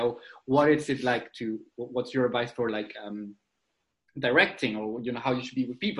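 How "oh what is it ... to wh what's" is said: usual speaking voice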